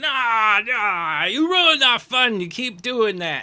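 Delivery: very loud, drawn-out, put-out, annoyed grumbling. Voicing other madcaps nearby answering the first: other madcaps complaining in character. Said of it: "the other ones nearby are like".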